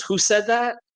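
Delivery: snarky retort tone. Retelling his reply to a question asked in a group: imitating a snarky retort. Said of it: "he's never that snarky with me".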